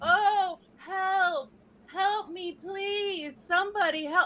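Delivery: over-the-top fake crying, very high and drawn-out. Imitating a woman whose behavior came off as fake: exaggerated fake plea for help. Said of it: "this is my impression ... it came off as fake".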